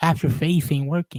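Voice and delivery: ordinary delivery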